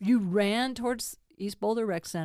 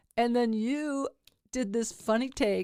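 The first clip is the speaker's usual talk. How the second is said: normal talking voice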